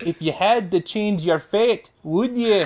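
spoken in a Scottish accent. Trying the Merida line after others asked for impressions: Merida voice, Scottish accent. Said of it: "I'll try and do the Merida line".

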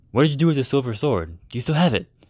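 anxious, uneasy, fretful, worried tone. Marcus asks the speaker what became of the silver sword, anxious. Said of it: "asked Marcus anxiously".

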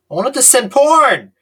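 shrill, very loud, high-pitched, full-volume yell. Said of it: "Why are we yelling the word porn?".

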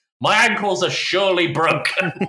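long, high, loud, dragged-out agonized scream. Retelling a TV scene where Dennis falls skiing, imitating Dennis screaming. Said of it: "he's just screaming".

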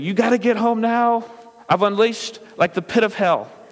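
put-on frantic, high-pitched panicked screaming. Retelling a wife's panicked phone call, imitating a panicked scream.

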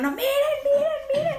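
frantic, very high-pitched, rushed desperate shout, acted out. Speaker retells how a companion suddenly started yelling, imitating a desperate yell. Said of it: "así con total desesperación".

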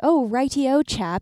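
put-on British accent. Mocking travelers who come home from abroad, put-on british accent. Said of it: "I don't pick up the British accent".

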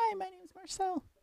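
tiny, very high, gentle little voice. Talking about the character's voice, doing Marcel the Shell voice. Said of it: "Y'all have heard his little voice".

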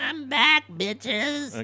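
very high, squeaky voice, pitched way up. Showing a Tash impression of a three-second social media clip. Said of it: "This is my Tash impression".

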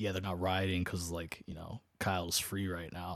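plain

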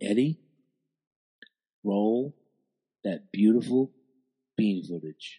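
hushed, going all quiet. Introducing what he calls the most famous words in podcast history, getting all quiet. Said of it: "And I'm going to get all quiet".

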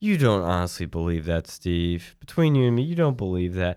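acted-out condescending, know-it-all, talking-down delivery. Retelling what the host said to his guest, imitating Bill Maher condescendingly. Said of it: "He's very condescending".

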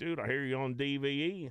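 put-on West Virginia accent. Retelling what a couple of guys said to him, in a West Virginia accent. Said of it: "I don't know why I did a West Virginia accent".

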